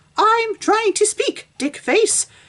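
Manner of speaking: very high-pitched cartoon voice. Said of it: "I'm using that voice for the actual Missus Puff".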